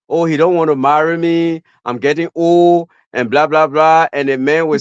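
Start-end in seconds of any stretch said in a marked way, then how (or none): 0.1-2.9 put-on weepy crying, speaking through tears. Retelling what women say about not getting married: imitating a crying woman. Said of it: "I've seen women crying".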